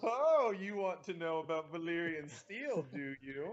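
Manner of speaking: mock teasing, smug, self-satisfied know-it-all voice. Mocking a man talking about valyrian steel, imitating a smug tone. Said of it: "I hear the goddamn smugness in his voice".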